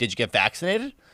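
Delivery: low, snide, dismissive, snarky tone. Retelling what the man who listened to their lungs asked, mimicking a snarky tone. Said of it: "He said it with a pretty snarky tone".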